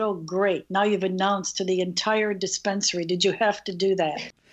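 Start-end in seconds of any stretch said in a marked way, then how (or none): none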